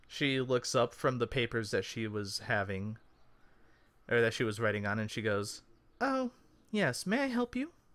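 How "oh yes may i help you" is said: put-on very high-pitched elderly woman voice. Voicing an older halfling lady looking up from her papers, older halfling lady voice. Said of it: "It's an older halfling lady".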